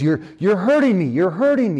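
high-pitched, hurt, pained crying out. Retelling a man crying out as he gets burned, retelling a pained cry. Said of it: "He starts crying out".

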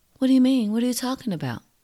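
very high, sugary, fake-sweet innocent voice. Retelling how a woman in trouble answered his FaceTime call, imitating her put-on sweet voice. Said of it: "she tries to do that sweet voice".

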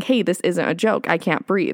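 plain

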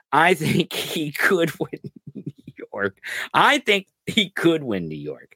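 slow words through held-back, laugh-laced laughter. Saying something you can hardly say without laughing, laughing while speaking. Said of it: "Can't hardly say it without laughing".

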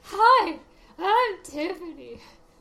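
high, very loud, energetic co-host voice. Showing that listeners couldn't tell both voices apart, do a really good Tiffany impression. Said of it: "that's your really good impression of me".

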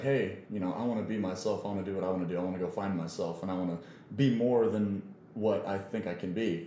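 normal talking voice

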